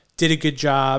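plain

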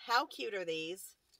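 heavy, sarcastic gush dripping with sarcasm. Talking about jelly beans they are mad about, very sarcastic. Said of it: "I'm just saying it very sarcastically".

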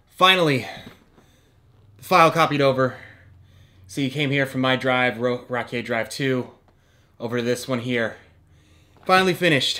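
out of breath. Waiting for a slow video file copy to finish, out of breath. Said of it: "I don't know why I'm out of breath".

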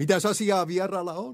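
very high, playful, teasing, jesting voice. Narrator reads a stranger calling to whoever is knocking, joking. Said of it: "Vieras mies laski edelleen leikkiä".

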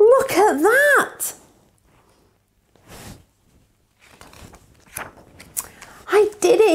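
high-pitched crying out. Peter points his family to the den he dug; crying out. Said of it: "he cried".

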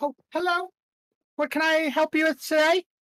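very high, prim, put-on British accent. A game master voices a stall woman greeting the players, in a british accent. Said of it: "Why does she sound British?".

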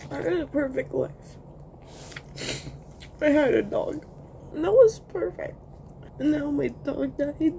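tearful, weeping, crying through the words. Speaker sits over a bowl of cereal and talks, crying while talking. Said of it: "I'm just crying over my bowl of cereal here".

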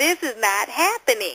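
ordinary delivery

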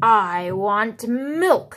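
very ill-mannered, rude, impolite voice. Reading a story aloud, the balloon makes a demand of James, very ill-mannered voice. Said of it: "the balloon spoke in a very ill-mannered voice".

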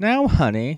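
high, syrupy, sugary sweet voice. Narrator retelling what she said before a month of detention, imitating a real sweet tone. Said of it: "real sweet".

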